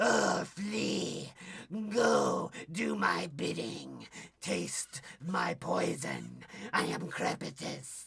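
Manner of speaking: rough, creaky, raspy villain voice. Toy reviewer voices the figure Crepitus as he imagines him, Crepitus voice. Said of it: "he talks like this".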